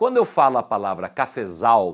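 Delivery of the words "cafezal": strong stress on last syllable zal in cafezal. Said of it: "a sílaba tônica está na última".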